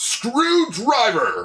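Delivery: acted out, very high, swooping announcer-style shout. Joking about a future show's transformation belt: imitating a shout. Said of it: "it literally just shouts".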